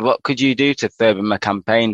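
normal talking voice

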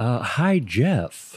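put-on, halting celebrity voice. Greeting a cohost while trying an impression: Jeff Goldblum impression. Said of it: "I was trying to do my, uh, uh, Jeff Goldblum impression".

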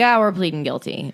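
ordinary talk, nothing marked

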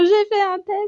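mock words sobbed out, high and tearful. Retelling going into the bedroom to announce a test, imitating crying while speaking. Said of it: "en pleurant".

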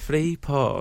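odd British voice, "porn" said in weird way. Doing an impression of a British investigative journalist saying porn: Jon Ronson impression. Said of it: "he sounds like Joel's impression".

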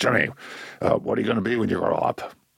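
put-on raspy, rough, creaky older man's voice. Retelling what the father said when the speaker was eight: imitating father's way of talking. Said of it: "that's the way he talked".

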